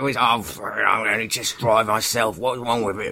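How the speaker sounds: aristocratic royal consort voice. Showing how he talks, Prince Philip impression. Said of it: "He's like this".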